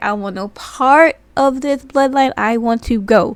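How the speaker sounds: loud, earnest, begging pleading cry. Retelling a wrestling segment, quoting a man who wants to leave: imitating someone pleading. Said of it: "just pleading and begging".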